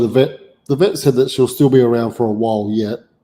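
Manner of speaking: normal talking voice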